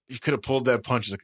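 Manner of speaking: ordinary talk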